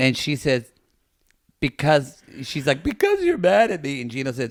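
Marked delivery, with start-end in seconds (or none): 2.8-4.0 put-on crying, blubbering words, high and sobbing.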